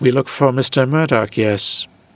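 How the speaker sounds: final yes kept flat and level, no rise. Imitating a man who always ends sentences with yes, flat final "yes", no rise. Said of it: "Not as a question. He never goes up at the end of the sentence. He just says it like it's a comma".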